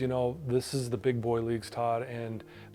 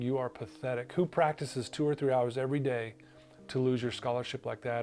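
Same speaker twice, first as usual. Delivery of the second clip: normal talking voice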